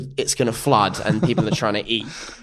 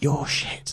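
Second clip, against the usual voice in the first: acted, utterly deadpan whispered put-down, flat. Retelling what a mum said after a cowboy performance: imitating someone deadpan. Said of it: "came up to me deadpan and went".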